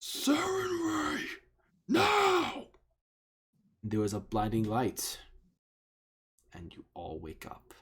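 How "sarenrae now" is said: high-pitched booming call with drawn-out "now". Narrating a game scene, the storyteller voices a character calling out in a booming voice. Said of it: "He calls out in a booming voice".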